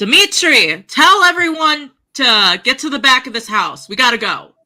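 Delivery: high yell, calling out to someone far away. Playing a character at a front door: yelling to Dimitri. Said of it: "I'm gonna yell at Dimitri".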